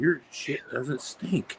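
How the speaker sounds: imitated whisper. Retelling a nurse bending down to his ear: imitating a whisper. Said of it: "bent down and whispered in my ear".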